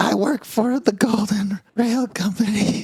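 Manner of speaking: high, shaking, trembling voice. Voicing a badly burned man answering a question: shaking from burns. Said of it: "he says as he, uh, shakes".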